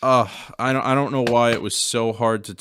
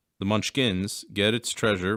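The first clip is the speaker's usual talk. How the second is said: usual speaking voice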